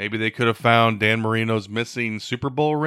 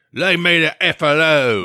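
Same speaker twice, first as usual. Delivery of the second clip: put-on British accent, higher and louder; 5 semitones higher, 7 dB louder than usual. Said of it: "maybe he said it with a British accent".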